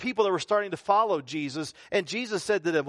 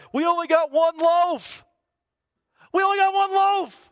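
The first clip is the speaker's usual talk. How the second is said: very high, loud, anxious fretting; 10 semitones higher, 6 dB louder than usual. Retelling the worried disciples complaining about bread: imitating worried disciples. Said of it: "they were so worried about".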